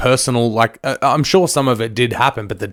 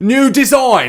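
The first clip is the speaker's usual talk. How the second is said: bad, terrible British accent, very high; 12 semitones higher, 4 dB louder than usual. Quoting the film character's reply about his windshield: terrible British accent. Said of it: "My terrible British accent".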